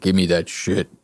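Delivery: deep, heavy voice full of bass. Imitating the man in the video with bass in his voice: imitating a bass voice. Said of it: "some goddamn bass in that goddamn voice".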